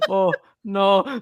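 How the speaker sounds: put-on Scottish accent. Retelling what someone said, Scottish accent. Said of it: "he uses a Scottish accent".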